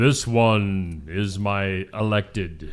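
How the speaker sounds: very slow, drawn-out delivery, "one" stretched long and stressed. Joking about how a pope should be chosen: booming God voice. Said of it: "in a booming voice".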